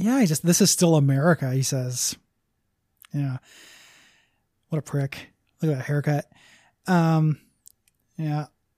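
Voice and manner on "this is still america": plain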